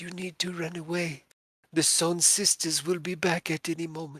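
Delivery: put-on high, small, little child's voice. A game master voices a figure approaching the players in the mist, in a small child's voice. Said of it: "it says in a small child's voice".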